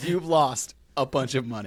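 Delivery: very slow, deliberate, spelled out word by word. Repeating another speaker's line for a joke: said slowly. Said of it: "let me say this slow".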